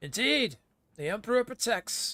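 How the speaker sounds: very high, shrill, booming imperious voice. In a narrated scene, the commissar repeats the call in an imperious booming voice. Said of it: "Commissar's imperious booming voice repeats your call".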